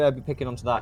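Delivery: ordinary delivery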